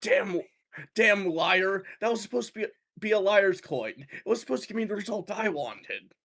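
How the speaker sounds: muttering under breath. A character whose coin did not give the result he wanted; muttering under his breath. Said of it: "under his breath".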